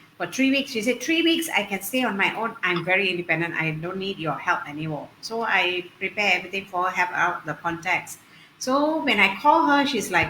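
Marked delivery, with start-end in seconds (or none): none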